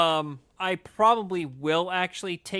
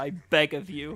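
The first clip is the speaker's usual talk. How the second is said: normal talking voice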